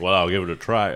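deep voice with an American accent. Joking about asking Barack Obama to open a drink: Barack Obama voice. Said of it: "That was my Obama".

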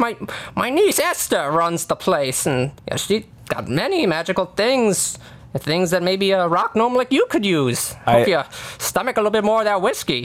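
put-on old farmer voice. Game master voicing a farmer on a hay carriage, talking to a rock gnome: old farmer character voice. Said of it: "There's a old farmer man kind of, you know, driving this horse-drawn carriage, carrying some hay".

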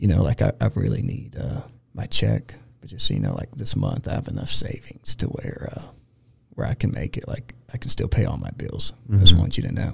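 quiet, hushed, confiding side whisper. Retelling what the master roaster told him on the side: imitating someone whispering. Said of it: "kinda whispering to me in the side".

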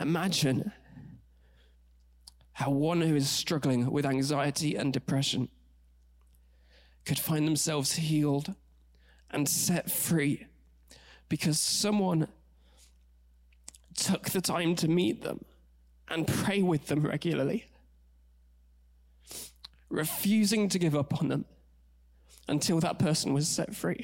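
voice choking up with emotion. Speaker sharing their own story with listeners, choking up. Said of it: "The reason I'm choking up".

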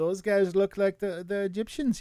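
attempted Danish accent. Speaker quotes a Danish man's remark in a put-on Danish accent. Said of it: "a wonderful accent".

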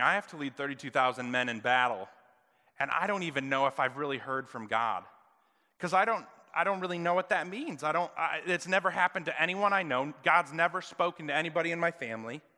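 ordinary talk

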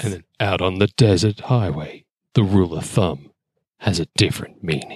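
deep, movie-trailer voiceover narration voice. Hosts joke about a movie; one narrates its trailer in a deep movie-trailer voiceover voice. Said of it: "put on my deepest sexist voice, like the voiceover dude".

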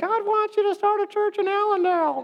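tiny, very high, cute cartoon squirrel voice. Imagining a squirrel on his knee giving a message: little cute squirrel voice. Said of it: "a little cute voice said".

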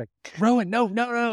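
mock panicked yelling. Recounting hearing Erica yell while letting the dogs out, imitating her panicked yelling. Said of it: "I hear her like yelling, like panicked".

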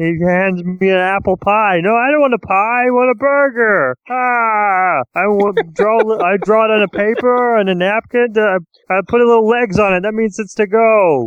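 "ah" stretched long and kept very high. Joking about a comedy show, doing a Ray Romano impression. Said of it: "I love your Ray Romano impression".

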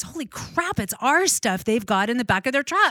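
high, loud, shocked outburst of realization.

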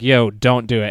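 ordinary talk

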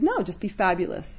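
ordinary delivery

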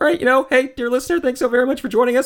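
put-on cartoon character voice. Doing the podcast outro in a Morty voice. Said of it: "which I will do in the in the Morty voice".

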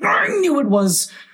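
wild, very high, very slow drawn-out outcry. A character stamps about and tears his hair, crying out wildly. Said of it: "cried Tweedledum, beginning to stamp about wildly".

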